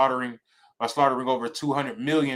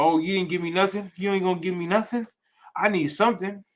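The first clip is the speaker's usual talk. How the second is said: mock weepy, pleading whine, high and crying; 6 semitones higher than usual. Retelling a Bible story, acting out a son pleading with his father: retelling someone crying. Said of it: "So now he's crying".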